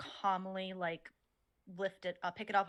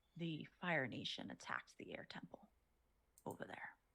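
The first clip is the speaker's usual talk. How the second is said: leaning-in, very hushed whisper; 4 semitones lower, 11 dB quieter than usual. Leaning in close toward the listener, voice lowered in volume. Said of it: "lower my voice several oct- uh just in volume a little bit".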